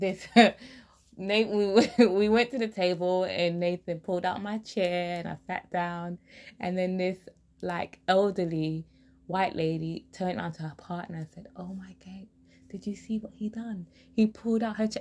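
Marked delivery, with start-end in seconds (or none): 11.5-15.0 hushed, whispered aside. Quoting what an elderly lady said to her partner, retelling a whisper. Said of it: "I'm whispering".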